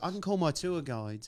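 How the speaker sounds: put-on high-pitched, upper-crust posh accent. Retelling what a posh woman said to them, the speaker imitates her accent. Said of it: "good accent, by the way".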